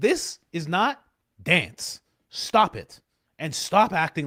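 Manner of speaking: loud, fed-up, angry outburst. Retelling own reaction to dance videos: imitating own angry reaction. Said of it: "I get so angry".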